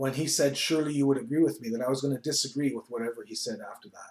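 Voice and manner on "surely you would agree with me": mock thick, heavy Dutch accent. A pastor recalls a man questioning him when questions were opened, imitating a thick Dutch accent. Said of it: "a thick Dutch accent".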